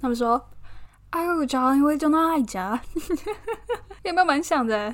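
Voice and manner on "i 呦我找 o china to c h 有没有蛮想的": mock British accent, much higher. Retelling what some people said to him, the speaker imitates their British accent. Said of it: "他们用英国腔大概是这样的念法".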